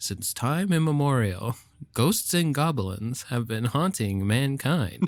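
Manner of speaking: parade announcer voice. Imitating the announcer introducing a Halloween parade: imitating a Halloween parade announcer. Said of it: "Like the announcer when he does, like, the Halloween parade".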